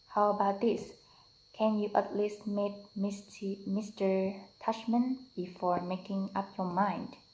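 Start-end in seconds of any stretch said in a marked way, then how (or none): none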